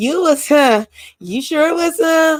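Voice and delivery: put-on insincere passive-aggressive tease, high, drawn out. Recounting how someone spoke to them, in a mock passive-aggressive tone. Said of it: "she was saying that in a passive aggressive, a passive aggressive way. It was more like".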